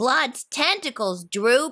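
ordinary delivery

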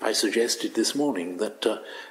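plain reading voice

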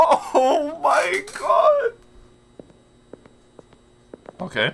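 very high, very slow, drawn-out cracking voice. A game streamer hoping he has reached the exit, voice breaking. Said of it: "my voice is breaking".

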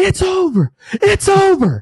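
loud scream.

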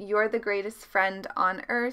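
ordinary talk, nothing marked

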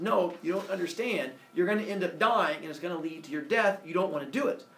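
ordinary delivery

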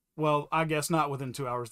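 ordinary delivery

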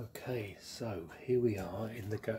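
quiet whispering. Showing the kiln at the back of the dark garage, the speaker is whispering. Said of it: "why am I whispering?".

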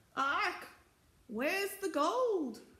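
very high, squawking, screeching parrot cry. Reading a story aloud, voicing the green parrot, in a screeching parrot voice. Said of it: "Screeched the green parrot".

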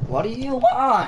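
voice breaking up, very high and cracking. Answering a friend who shouted his name mid-game, voice cracking. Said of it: "Stop making your voice crack".

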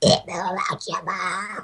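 low, hushed, soft cartoon alien voice. Taking a turn, the speaker tries out his Stitch voice. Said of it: "I gotta get my Stitch voice".

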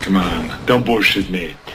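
tough, low detective voice.

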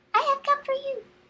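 very high, squeaky little voice. A strange little man appears from smoke and speaks to Peter, high squeaky Rumpelstiltskin voice. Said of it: "in a high, squeaky voice".

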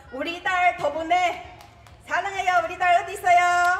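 high, affectionate calling out.

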